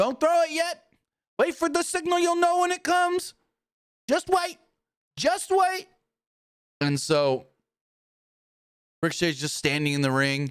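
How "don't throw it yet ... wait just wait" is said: very high, raised, ringing yell. Retelling a wrestling segment where Prince Nana yells at the crowd: imitating a yell. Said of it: "he's just yelling".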